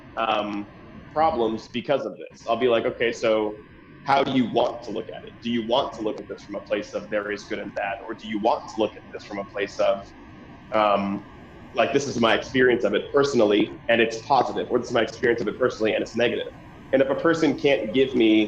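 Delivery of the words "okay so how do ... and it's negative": usual speaking voice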